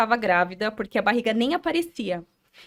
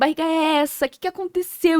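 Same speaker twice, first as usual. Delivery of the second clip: mock sobbing, distraught, desperate crying; 5 semitones higher than usual. Retelling how the speaker's mother reacted in tears, imitating mother crying. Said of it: "E chorando".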